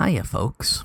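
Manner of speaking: breathy, hushed, whisper-soft radio host voice. Greeting listeners at the start of the episode: NPR voice. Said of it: "that's the N P R voice you're doing".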